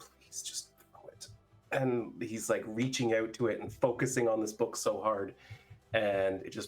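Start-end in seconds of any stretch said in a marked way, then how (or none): 0.0-1.3 hushed whisper under the breath. He reaches toward a book on a shelf across the room, focusing hard, whispering under his breath. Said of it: "can hear him whisper under his breath".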